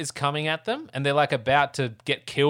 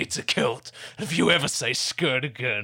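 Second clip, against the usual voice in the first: put-on Scottish accent. Retelling a film scene, quoting the man who calls it a kilt, in a Scottish accent. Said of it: "my Scottish accent wasn't that bad".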